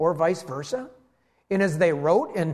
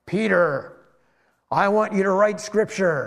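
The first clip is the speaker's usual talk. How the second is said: booming voice from heaven, divine and loud. Speaker acts out heaven speaking to a Bible writer, in a booming voice from heaven. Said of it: "he heard this booming voice from heaven".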